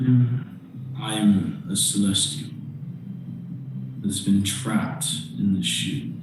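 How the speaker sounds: soft, whispered voice. Voicing a celestial trapped in a shield, speaking in a player's head: whispering voice. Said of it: "a whispering voice in your head".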